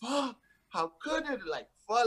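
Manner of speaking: put-on high scream at top of lungs. Retelling hearing a man in a bathroom breaking things, imitating him screaming. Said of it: "he's like screaming at the top of his lungs".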